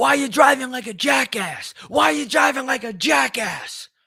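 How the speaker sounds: mock very high, shrill, repeated screaming. Retelling a drive-through run-in, imitating a man yelling from his car window. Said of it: "I hear this guy fucking yelling at me".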